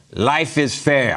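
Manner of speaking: put-on Russian accent. Telling a joke about a Russian guy who worked at the fair, in Russian accent. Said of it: "How about that for a Russian accent?".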